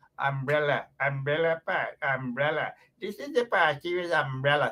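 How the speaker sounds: mock garbled mispronunciation. Mocking a guy who can't pronounce a word, garbled mispronunciation. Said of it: "this guy can't even pronounce the word umbrella".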